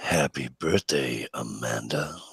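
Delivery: voice dropped down very deep, hushed. Told by another speaker to drop the voice five octaves, saying a birthday greeting, voice dropped very deep. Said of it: "Let your voice drop five octaves".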